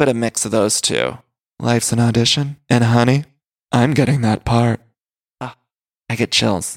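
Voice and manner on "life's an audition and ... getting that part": fake low, seductive dramatic voice. Imitating a cast member's tagline: Garcelle's deep sexy voice. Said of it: "It's a little Luann".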